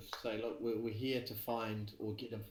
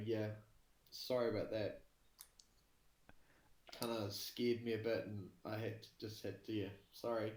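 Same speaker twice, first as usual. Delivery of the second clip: meek, humble, sheepish, apologetic tone. Voicing a character apologizing to an angry figure: humble and apologetic. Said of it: "Trying to look as humble and, and sort of apologetic".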